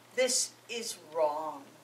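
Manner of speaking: slow, firm and steady.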